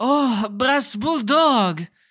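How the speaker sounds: very loud, vague European accent. Showing the other speaker the accent they asked for, in a vague European accent. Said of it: "I will talk like this".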